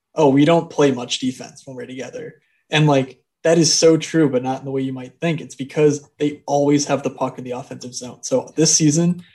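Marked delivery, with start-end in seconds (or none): 0.2-2.4 flat deadpan delivery. Podcaster retells a hockey player's answer to a question about a teammate, mock-deadpan McAvoy imitation. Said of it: "McAvoy's response was deadpan".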